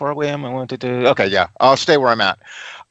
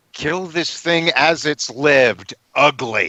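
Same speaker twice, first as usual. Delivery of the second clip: play-acted fed-up, angry cry called across; 2 semitones higher than usual. On their turn in the game, the character is yelling angrily to Froseth. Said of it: "I'm just yelling to Froseth".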